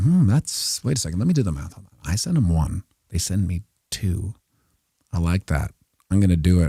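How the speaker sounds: naive, gullible, easily fooled voice. Retelling how people react to a Bitcoin scam offer: imitating people falling for a scam. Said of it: "people are like".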